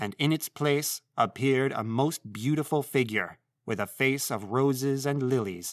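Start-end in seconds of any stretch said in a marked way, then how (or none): none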